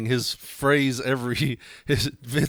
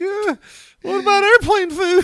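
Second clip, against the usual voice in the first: put-on very high, loud blubbering fake crying wail; 8 dB louder than usual. Joking about being on stage and crying, mock crying while telling a joke. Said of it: "Me just on stage crying, like".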